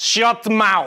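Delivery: put-on Russian accent. Signing off the video, the host practices a line in a Russian accent. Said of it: "practicing my Russian accent by saying".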